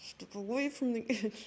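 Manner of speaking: forced, practised angry voice, trying hard. Speaker, asked about sounding angry, practices being angry, mock angry voice. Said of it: "just practice being angry".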